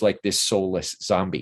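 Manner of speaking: ordinary talk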